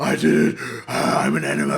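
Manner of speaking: loud, roaring beast voice. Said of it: "I like your beast voice".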